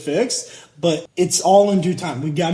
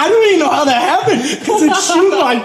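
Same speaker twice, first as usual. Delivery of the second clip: put-on voice through tearful laughter; 12 semitones higher, 6 dB louder than usual. Retelling a plumber's reaction on the phone: imitating Rudy crying with laughter. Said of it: "he starts crying, laughing on the phone".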